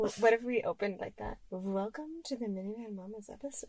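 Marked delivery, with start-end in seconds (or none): 1.5-3.7 put-on seductive voice, much quieter. Speaker tries out an opening line for the podcast, fake sexy voice. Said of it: "I don't know if that was sexy".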